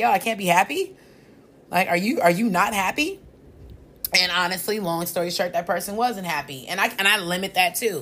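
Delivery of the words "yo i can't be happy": mock-incredulous laughing, much higher pitch. Retelling a reaction to how someone said something, retelling a laughing reply. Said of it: "I laughed".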